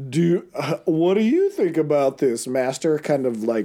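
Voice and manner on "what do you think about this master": put-on swooping cartoon goblin henchman voice. Acting out the henchman in a photo, speaking to his master: cartoon henchman voice. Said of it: "cartoon henchman vibe".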